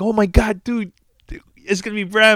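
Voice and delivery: frantic, very high-pitched, scared screaming. Retelling a phone call where Pete got scared: imitating Pete screaming. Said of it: "He started screaming".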